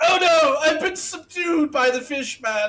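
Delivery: very high, loud, hammy fake dismay and distress. Dropping to the floor and pretending to lose a fake fight: mock distress, pretending to be defeated. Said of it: "drop prone and be like".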